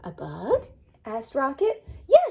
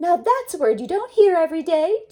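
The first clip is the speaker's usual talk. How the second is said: chirpy, chirping voice like a small bird; 7 semitones higher, 5 dB louder than usual. Reading a story aloud, the little red bird speaks to Rocket, chirping. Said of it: "chirped the little red bird".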